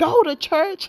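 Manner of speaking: mock sudden, high-pitched screamed outburst. Retelling an aunty's line from a show trailer: imitating a scream. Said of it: "one of them screamed".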